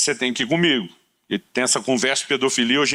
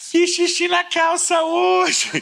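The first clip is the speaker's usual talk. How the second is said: put-on laughing through words, very high and slow. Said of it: "E ela ria".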